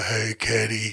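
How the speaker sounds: put-on deep voice. Describing a nephew who talks real deep, imitating a deep voice. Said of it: "He talks real deep".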